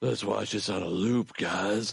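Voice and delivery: creepy, eerie voice. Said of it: "the creepy voice there".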